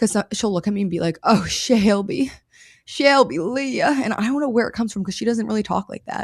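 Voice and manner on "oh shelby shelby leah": very slow, over-the-top mother voice, words stretched. Telling viewers how mom calls your name, imitate mom being dramatic. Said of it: "that voice is me impersonating my mom".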